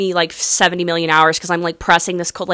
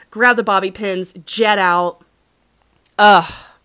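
ordinary talk, nothing marked

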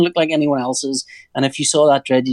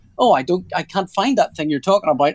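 smart-speaker voice-assistant style delivery; 4 semitones higher than usual. Retelling how the renamed speaker answers a Star Trek line: imitating Alexa voice. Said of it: "Alexa just went".

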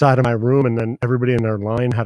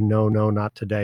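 ordinary talk, nothing marked

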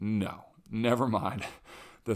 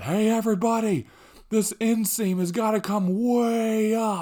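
very high, shrill, loud yelling shout; 12 semitones higher, 7 dB louder than usual. Speaker retells a tailor calling out to everybody about the inseam, imitating the tailor yelling. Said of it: "He's like yelling to".

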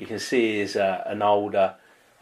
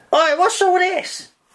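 shrill, high, loud, raised scruffy voice; 6 dB louder than usual. Voicing a bedraggled figure finding intruders: bedraggled householder character. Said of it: "bedraggled looking head kind of pops up".

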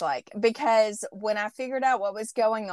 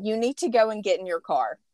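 mock-stern, imitated referee voice. Speaker retelling what the ref said when a woman argued, imitating stern referee. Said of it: "he was like stern".

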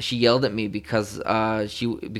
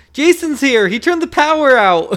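acted, shrill, very high, loud freaked-out blurt; 11 dB louder than usual. Retelling calling for dad after the power went out: imitating own panicked calling. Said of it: "I was freaking out so bad".

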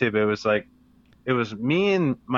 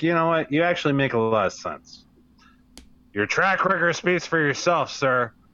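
half-genuine, half-sarcastic tone; 3 semitones higher than usual. Retelling own reply to a seminar teacher: imitating own past sarcastic praise. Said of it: "giving props and being sarcastic at the same time".

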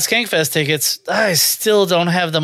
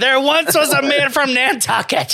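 shrill put-on comic voice, higher; 8 semitones higher than usual. Imagining what the other's cock would sound like: Gilbert Gottfried voice. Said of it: "I just imagine it's Gilbert Godfrey".

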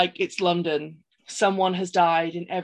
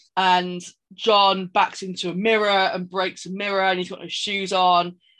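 normal talking voice

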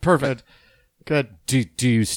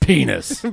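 put-on angry tone. Imitating how another speaker angrily says a word: imitating an angry delivery. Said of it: "It just sounds so angry when he says it".

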